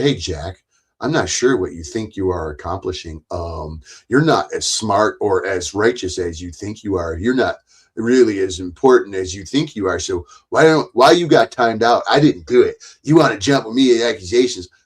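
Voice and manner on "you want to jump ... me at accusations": ordinary talk, nothing marked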